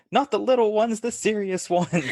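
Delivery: high, shrill screaming woman's voice. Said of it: "she screams, like".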